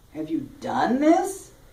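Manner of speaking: DONE stressed and held, rising at the end.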